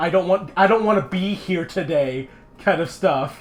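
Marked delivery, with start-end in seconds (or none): none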